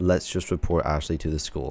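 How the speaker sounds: plain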